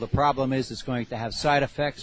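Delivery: ordinary talk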